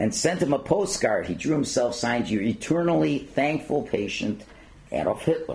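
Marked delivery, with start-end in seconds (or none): none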